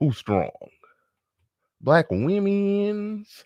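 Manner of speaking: very high, shrill, drawn-out "women's". Reading out chat news, then doing a David Carroll impression. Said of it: "That's my David Carroll".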